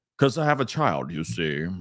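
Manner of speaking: low, put-on wise old man voice. Joking that having children makes one sound wise: put-on old wise man voice. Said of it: "and you talk like this".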